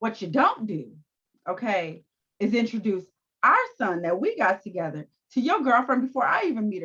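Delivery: combative, confrontational tone, swooping pitch. Retelling what she said in an argument: imitating a combative tone. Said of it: "The way she said that shit".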